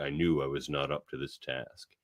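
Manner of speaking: acted low muttering. Reading out a comic line where the captain doubts himself: Worf muttering under his breath. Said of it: "mutters under his breath".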